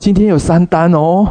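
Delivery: high, proud, boastful tone.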